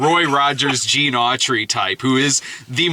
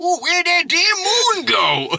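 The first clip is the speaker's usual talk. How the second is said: put-on wild old-prospector holler, very high and swooping. Retelling a movie scene of an old prospector: imitating a screaming old prospector. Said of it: "he's screaming at the moon".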